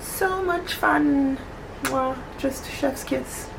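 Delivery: high, slow, sarcastic gushing.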